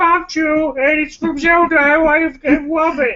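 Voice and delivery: mock gushing fan voice, high and slow.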